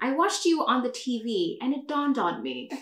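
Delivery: put-on British accent, quick and swooping. Quoting what the aunt says in the film: British accent. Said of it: "Why am I whipping out the British accent?".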